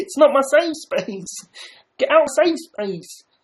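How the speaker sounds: very high-pitched, puppet-style voice. After joking about getting reported, doing a Kermit the Frog impression. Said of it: "That was Kermit the Frog".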